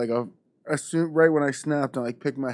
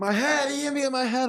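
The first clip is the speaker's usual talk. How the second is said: mock screamed protest, very high-pitched; 12 semitones higher than usual. Retelling a complaint to the referee after a hit to the head: retelling his own screaming. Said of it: "I'm screaming".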